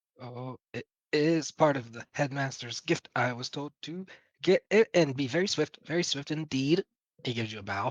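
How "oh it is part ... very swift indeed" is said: put-on nervous, anxious young apprentice wizard voice. The narrator voices a young wizard answering where the horses go: nervous young wizard voice. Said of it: "young wizard in robes ... nervously looking".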